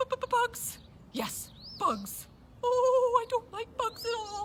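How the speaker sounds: bustling, very busy squirrel character voice. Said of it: "A very busy, busy, busy, busy, busy squirrel".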